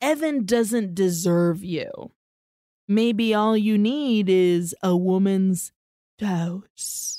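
put-on sensual voice. Retelling a show scene where a character flirts: sensual Zabeth voice. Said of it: "all sensual with her".

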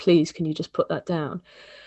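put-on desperate, pleading tone. Quoting a French girl who came to ask the speaker a favor, imitating desperate pleading. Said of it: "really kind of like desperately pleading with me".

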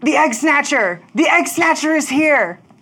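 very high, shrill, shrieking bird voices. Voicing the birds in a game scene: screaming birds. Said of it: "They're screaming".

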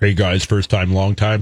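very deep, very low disguised voice. Sports show hosts joke about masking callers' identities: disguised caller voice. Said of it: "Like a disguised voice".

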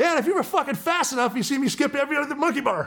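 play-acted, very high, loud shouted delivery. Retelling yelling back across the course at a team guy, retelling yelling back. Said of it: "And I yell at him".

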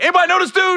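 mock, very high, loud shout. Retelling how Mike reacted to an unknown man backstage, imitating Mike yelling out. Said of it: "And then he yelled out".

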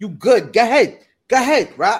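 put-on New York woman's accent, loud and high. Acting out what a woman says, in a New York woman accent. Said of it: "Fame's New York woman accent".

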